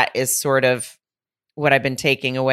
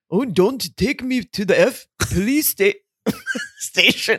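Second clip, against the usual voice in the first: weird, slow, dragged-out, swooping put-on voice swinging high; 9 semitones higher than usual. Imitating how someone on the show might quip: Arnold impression. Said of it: "That's his Arnold impression".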